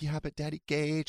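weepy, freaked-out, tearful crying. Retelling a child's reply to a parent: imitating someone crying. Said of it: "She was, like, crying".

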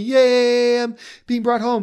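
high, gleeful potato voice, yay stretched long. Joking about a potato being brought home, voicing the potato: happy potato voice. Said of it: "the potato is so happy".

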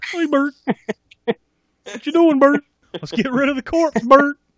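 very high, squeaky puppet voice. Showing how the bit should be done, Bert and Ernie puppet voice. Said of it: "start doing the Bert and Ernie Bert".

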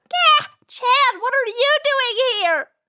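distressed tone. Surprised to find a coworker back, asking what he's doing here, upset. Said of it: "I didn't mean to sound upset".

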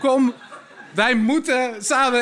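disguised reindeer voice.

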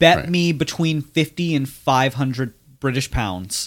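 ordinary talk

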